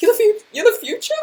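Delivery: doubtful, unsure tone rising in pitch on future. Acting out the inner voice asking itself: questioning rising tone, put on. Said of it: "With, like, a question mark".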